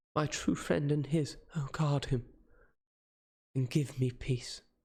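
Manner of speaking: faint, weak pleading voice full of pathos. A woman kisses her true friend's hand and speaks to him: faint voice. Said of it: "I found that [name] moved slightly, / in a faint voice".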